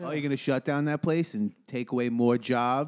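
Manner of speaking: put-on Floridian voice. Joking with the others, imitating a Floridian. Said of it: "That's my version of how Floridian speaks".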